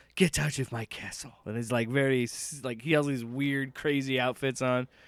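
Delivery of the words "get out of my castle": put-on thick Scottish accent, laid on theatrically. Describing a TV show host's theatrical delivery: Alan Cumming thick Scottish accent. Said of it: "real thick, like, Scottish accent".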